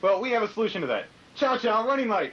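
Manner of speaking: salesy infomercial pitch voice.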